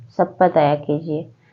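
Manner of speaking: plain reading voice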